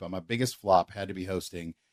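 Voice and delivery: ordinary talk, nothing marked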